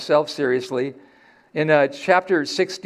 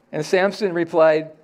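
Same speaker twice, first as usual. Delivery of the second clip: ordinary talk, nothing marked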